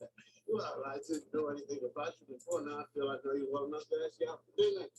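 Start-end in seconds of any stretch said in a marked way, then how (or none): 2.6-4.9 fast, rushed, rattled-off delivery. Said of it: "And you talk fast".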